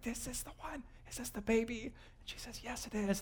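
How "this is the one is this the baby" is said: soft, quiet, hushed whisper. Retelling how they ask Mary about her baby: retold quiet whisper. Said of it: "they do that quiet kind of whisper thing".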